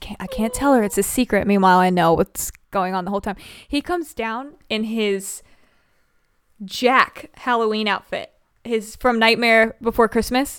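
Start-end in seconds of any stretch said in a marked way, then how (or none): 0.0-1.5 put-on nervous, excited child voice, lower. Retelling what a son said before a date: imitating a nervous, excited son. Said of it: "all nervous and excited".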